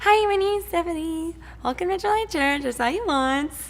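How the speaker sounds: small high-pitched voice. Retelling her phone call welcoming a newcomer to church, little high-pitched voice. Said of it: "with my little high pitched voice".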